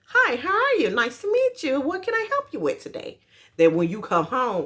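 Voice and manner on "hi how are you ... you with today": very high, courteous, polite customer-service voice. Contrasting how people talk at work and at home: work voice. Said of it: "we have our work voice".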